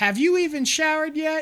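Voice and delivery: very high, angry screaming voice. Retelling how a boy's mom came in screaming at him, imitating a screaming mom. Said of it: "start screaming at him".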